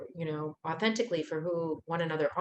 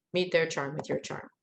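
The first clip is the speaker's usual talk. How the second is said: ordinary talk, nothing marked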